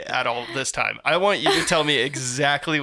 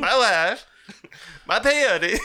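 put-on, pitched-up Eastern European accent; 6 semitones higher than usual. During a role-play session, a player riffs in character: kind of Borat accent. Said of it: "That was kind of Borat".

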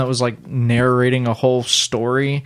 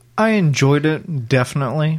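hesitating; 2 semitones higher than usual. Asked what he thought, [name] gives his opinion, hesitant. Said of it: "You hear that hesitation in my voice?".

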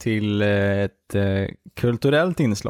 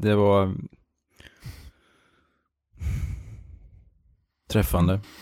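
eyes welling up, teary. Responding to the other speaker's verse, teary-eyed. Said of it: "jag blir tårögd".

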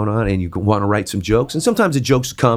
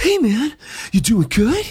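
very high-pitched, casual, easygoing delivery; 14 semitones higher than usual. Listing celebrity voices he can do, in a Mark Wahlberg impression. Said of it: "So you got Mark Wahlberg".

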